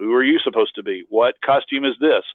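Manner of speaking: ordinary delivery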